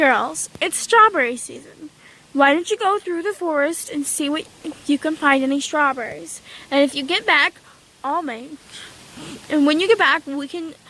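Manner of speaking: ordinary delivery, nothing marked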